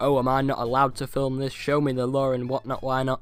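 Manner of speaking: ordinary talk, nothing marked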